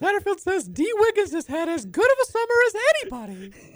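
pitched way up, bouncy and animated. Reading out a quote after asking for all quotes in Mickey Mouse voice. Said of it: "I want all Satterfield quotes in Mickey Mouse voice now".

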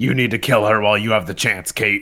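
dark, full-on superhero voice. Quoting a killer Batman line from a show: Kevin Conroy impression. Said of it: "damn good Kevin Conroy impression".

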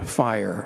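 fiery voice barely above a hush, very quiet. Showing how tone changes meaning, leaning into the microphone: fire said very quietly. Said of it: "say very quietly".

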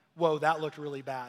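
plain

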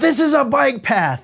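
very high, shrill, furious angry yell. Retelling how an angry biker yelled over his shoulder: imitating an angry yell. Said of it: "he yells".

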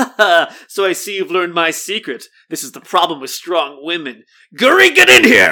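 loud, smug, villain-like gloating. Retelling a scene from the book: imitating smug Xizor. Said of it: "does a smug little".

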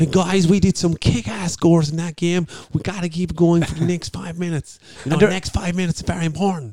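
bad put-on American accent. Imitating the halftime chat at a game, in a very bad Cork American accent. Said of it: "Very, very bad Cork American accent".

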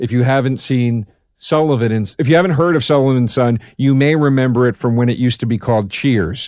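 ordinary talk

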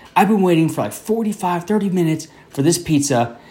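put-on, high, fed-up, pissed-off griping. Speaker retells a customer waiting on his pizza; mimicking a pissed-off customer. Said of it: "he's super pissed".

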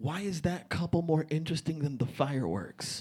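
put-on, soft, incredibly condescending voice. Retelling what a girl they were with said, in a mock-condescending voice. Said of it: "in an incredibly condescending voice".

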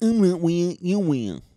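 put-on deaf accent. Repeating his own retort, now in a put-on deaf accent. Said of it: "Is it offensive to do the deaf accent?".

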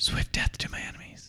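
soft breathy whispering. Voicing a magic bow as it is drawn back: whispering bow. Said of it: "and it whispers to you in Elvish".

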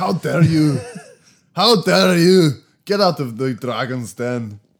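wobbly Scottish accent with European tinge. Trying out an accent in front of Harry, in a Scottish accent with European tinge. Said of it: "some European tinge coming in there".

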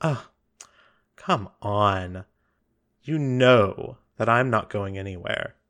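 yawning, relaxed, bored voice. Voicing a relaxed masked ruler who yawns at a threat: yawning, relaxed bored voice. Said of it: "And she yawns. She just goes".

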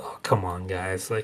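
put-on disgusted tone. Picturing a musician backstage during prompted applause: imitating someone disgusted.

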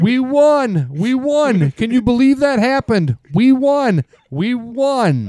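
very high, shrill screaming, won stretched. Retelling how their wife called them screaming with the news: imitating someone screaming. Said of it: "she was screaming".

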